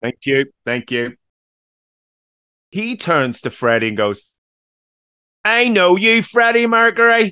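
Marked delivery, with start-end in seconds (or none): 5.4-7.3 put-on very high-pitched childlike voice, like a small boy. Retelling a film scene, imitating Paul Prenter like a child. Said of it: "He says it like he's a child".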